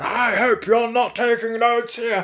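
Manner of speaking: very high, booming, bellowing scream. Recounting a judge calling out to them in court: retelling a judge's booming shout. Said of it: "a booming voice, a judge screams out".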